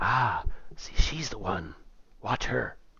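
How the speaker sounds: soft, hushed whispered aside. Voicing a character who points someone out to a player: whispering. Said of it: "she whispers to you".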